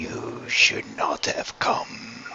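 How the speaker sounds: gravelly, angry, hushed whisper with dread. Narrator voicing an unseen voice in complete darkness: angry, gravelly, dreadful whisper. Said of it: "the angry voice whispers in a very in a dreaded manner, gravelly voice".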